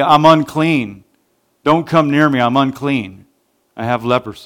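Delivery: ordinary talk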